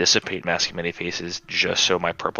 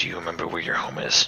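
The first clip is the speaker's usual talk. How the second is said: hushed, soft, quiet aside. Quietly asking a creature a question so only he hears: quiet, speaking softly. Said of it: "I'll quietly say to the Grutu".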